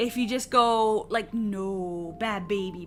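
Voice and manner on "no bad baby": low-pitched voice, low tone. Showing how to react when a baby chomps you, low tone. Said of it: "with like a low tone".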